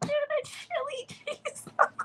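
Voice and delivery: squeaky put-on voice, whispered. Retelling a date who joked about the menu, imitating him: squeaky imitation voice. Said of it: "like the voice, but it's like squeaky".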